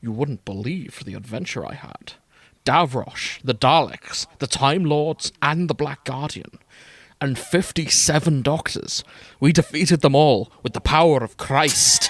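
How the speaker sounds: badly done put-on Scottish accent. Voicing a character in a game, recounting an adventure: bad Sean Connery impression. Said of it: "My Scottish is not good".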